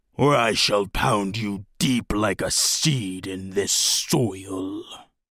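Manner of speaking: low guttural rasping growl, drawn out. Narrator reading a fantasy story voices a warhammer-wielding creature: guttural rasping growl. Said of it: "he growled in a guttural rasp".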